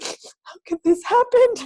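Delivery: put-on tearful wail, very high and loud. Retelling crying over a book while reading it: imitating herself crying. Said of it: "go pick it up crying".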